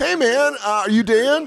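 high-pitched, loud, excited fan voice. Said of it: "When people are like".

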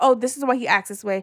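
normal talking voice

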